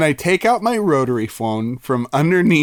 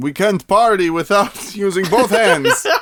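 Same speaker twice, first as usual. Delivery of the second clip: fake, high-pitched Scandinavian accent; 6 semitones higher than usual. Joking about Vikings needing both hands for drinks: put-on Scandinavian accent. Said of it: "That's my Scandinavian accent".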